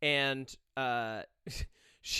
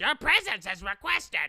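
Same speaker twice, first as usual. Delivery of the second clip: high, odd, weird-sounding yell; 5 semitones higher, 4 dB louder than usual. Recounting a movie scene at the theater, imitating Robert Pattinson's weird yell. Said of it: "yelling at him, but in this weird fucking voice".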